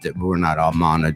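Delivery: level, flat, dropped deep monotone drone. Teasing a co-host about talking in monotone, doing a mock flat monotone. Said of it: "You go like this".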